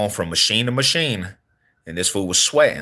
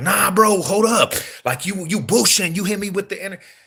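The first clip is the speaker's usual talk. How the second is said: put-on high-pitched, very high screaming; 11 semitones higher than usual. Retelling how the person hit with a drink reacted: imitating someone screaming. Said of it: "he started screaming like".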